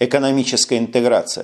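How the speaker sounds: usual speaking voice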